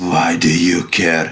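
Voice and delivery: put-on low, angry, disgusted old woman's voice. Voicing an old woman asked why she hates fish: angry, disgusted old woman. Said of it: "with such an angry and disgusted face".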